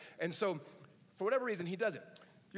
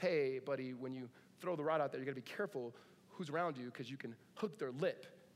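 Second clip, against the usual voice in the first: put-on very calm voice, lower pitch; 4 semitones lower than usual. Retelling a dad's warning to his son on the boat, imitating him very calmly. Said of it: "And his dad very calmly says".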